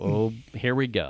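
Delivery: dry, low, flat, expressionless deadpan. Retelling own reaction with raised eyebrow: imitating own deadpan delivery. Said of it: "I'm deadpanning".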